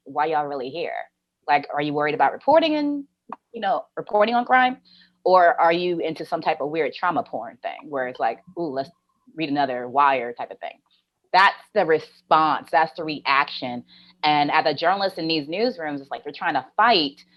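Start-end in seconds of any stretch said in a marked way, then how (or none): none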